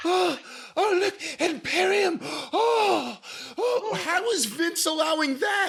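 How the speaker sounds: high, slow, breathless panting announcer voice.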